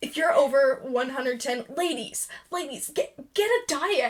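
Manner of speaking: earnest, dead serious, totally straight-faced, matter-of-fact. Retelling what a man in a TikTok said, imitating his tone. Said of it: "he seriously said it in that tone".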